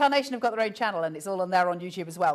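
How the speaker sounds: rushed very fast, loud rattling delivery. Speaker unsure whether allowed to mention something, saying it real fast. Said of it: "I'll say it real fast".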